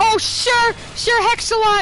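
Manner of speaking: yelling out loud.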